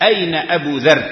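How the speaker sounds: plain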